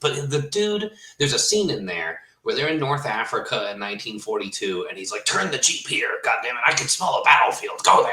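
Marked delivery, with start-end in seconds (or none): 5.2-8.1 pitched-up speech, as if with bolts in the mouth. Retelling a war-movie scene with a general: Patton voice, bolts in mouth. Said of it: "he talks like he's got bolts in his mouth".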